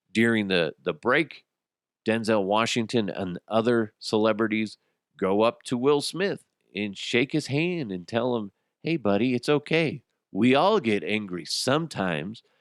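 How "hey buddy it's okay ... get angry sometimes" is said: put-on condescending baby talk, talking down. Retelling celebrities comforting someone: talking down like to a kindergartner. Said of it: "like they're talking to a fucking kindergartner".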